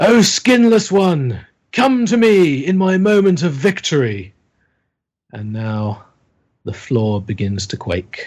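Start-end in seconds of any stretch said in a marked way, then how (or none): 0.0-4.3 wild, high, shouted call. Game master voices the skinless figure Macriat shouting to the players: Macriat's wild shout. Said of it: "laughs wildly, and then he shouts out".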